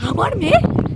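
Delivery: stunned, disbelieving tone.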